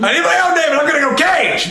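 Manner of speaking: very high-pitched, loud shouted yell. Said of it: "If you wanna yell".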